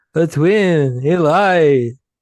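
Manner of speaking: put-on slow slurred drawl. Voicing a line with his Stallone approach, Stallone impression, unmoving lower lip. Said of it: "not moving my lower lip".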